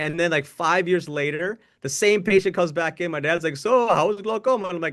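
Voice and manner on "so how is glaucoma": put-on Indian accent, pitched up. Retelling his dad asking about glaucoma, in an Indian accent. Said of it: "He'd actually say in the Indian accent".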